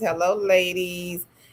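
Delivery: ordinary talk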